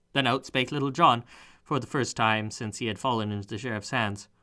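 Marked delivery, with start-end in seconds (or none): none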